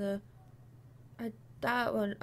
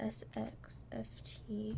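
soft, slow, quiet delivery.

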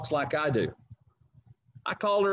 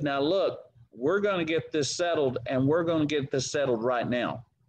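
normal talking voice

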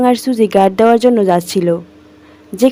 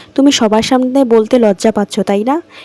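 ordinary delivery, nothing marked

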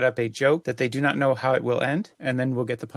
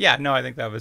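plain

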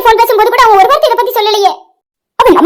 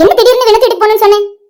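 ordinary delivery

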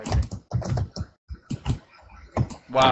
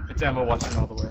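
usual speaking voice

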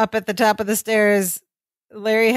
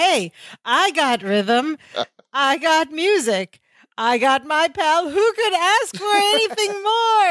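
play-acted delighted, slow, gleeful, rising, drawn-out delivery; 7 semitones higher than usual. Describing the piano-moving scene with Larry, speaker retells Balki's line joyfully. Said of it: "he says it so joyfully".

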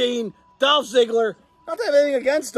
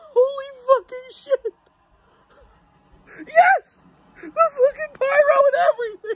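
tearful speech, crying while talking; 11 semitones higher than usual. Reacting to something with pyro that moves the speaker, crying while talking. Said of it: "I'm in fucking tears right now".

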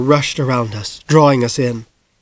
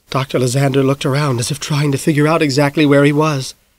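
ordinary delivery

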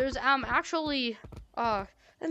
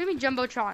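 ordinary talk, nothing marked

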